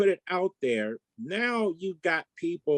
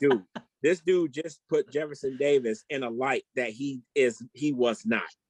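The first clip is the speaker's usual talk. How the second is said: ordinary talk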